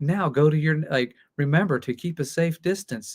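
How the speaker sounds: robotic, machine-like voice. Teacher recalling the new classroom bell announcement, in a Sonny robot voice. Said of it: "it's a robot voice".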